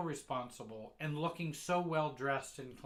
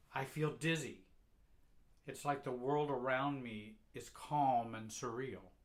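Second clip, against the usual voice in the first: ordinary talk, nothing marked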